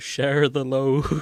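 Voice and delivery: put-on slow-motion, drawn-out speech. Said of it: "Sam is just saying in slow motion".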